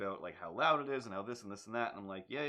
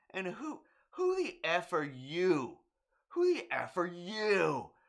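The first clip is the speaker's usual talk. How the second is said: mock shrill, swooping scream, words slow, you drawn out; 8 semitones higher, 6 dB louder than usual. Retelling what a neighbour screamed at them on the stairs: imitating someone screaming. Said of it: "she screams at me".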